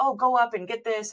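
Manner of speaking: mock hurried, urgent yelling, pitched high. Retelling how the speaker's sister yelled at the kids when a pipe burst, imitating the yelling. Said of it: "was like yelling at the kids".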